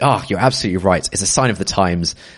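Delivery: ordinary delivery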